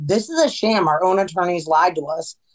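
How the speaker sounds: ordinary delivery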